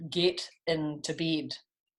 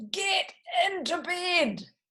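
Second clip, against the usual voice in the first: big, very high storybook voice. Reading a story aloud, the narrator voices George's line in a big voice. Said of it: "George said in a big voice".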